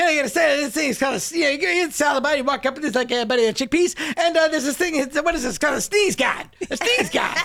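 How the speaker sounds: put-on Boston accent. Retelling a man's old comedy bit about a salad bar, in a thick boston accent. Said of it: "he had a thick Boston accent".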